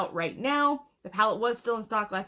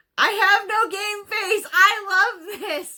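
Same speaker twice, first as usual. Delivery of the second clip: excited yell, very high and loud; 11 semitones higher, 8 dB louder than usual. Showing viewers a finished makeup look, excited yelling. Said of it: "sorry, I didn't mean to start yelling".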